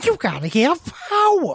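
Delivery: swooping, drawn-out, high, slow New York moll drawl. Imitating a movie line in a new york gangster's girlfriend voice. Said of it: "he turns into a real weird, like, a, a New York gangster's girlfriend, like, in his voice".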